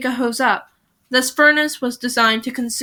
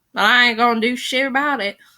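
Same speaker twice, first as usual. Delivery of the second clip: slipping into a country accent. Podcast host, peeling off a sticker, keeps talking in a country accent. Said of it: "I don't know why I'm country right now".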